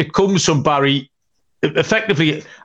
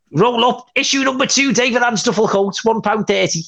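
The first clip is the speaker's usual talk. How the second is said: high Scouse Liverpool accent, called out; 7 semitones higher than usual. Imitating a fanzine seller outside Goodison Park; Liverpool accent. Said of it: "That was a Liverpool accent".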